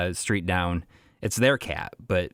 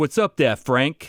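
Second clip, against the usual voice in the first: put-on Brooklyn accent, loud and high; 7 semitones higher, 5 dB louder than usual. Speaker shows how to talk to a cat named Frankie: Brooklyn accent. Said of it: "you got to talk talk to him like in a Brooklyn accent".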